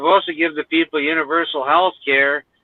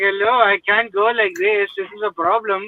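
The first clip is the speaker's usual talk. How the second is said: imitated Indian accent; 4 semitones higher than usual. Speaker shows how someone used to break the ice, in a put-on Indian accent. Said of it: "It's like the new Indian accent".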